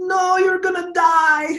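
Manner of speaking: put-on very high-pitched Eastern European accent. Retelling his mom's reaction to him playing football, in her eastern european accent. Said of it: "Eastern European accent".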